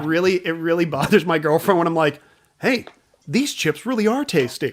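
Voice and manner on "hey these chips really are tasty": salesy, pitching TV commercial announcer voice. Explaining the voice that bothers his girlfriend, slipping into commercial voice. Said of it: "I sometimes get commercial voice".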